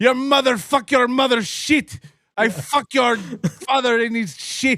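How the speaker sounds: put-on slow, high-pitched Indian English accent. Imitating a foreigner using english slang insults: impression of an indian guy speaking english. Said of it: "the impression of, like, the Indian guy".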